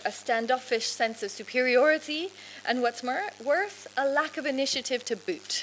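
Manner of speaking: ordinary delivery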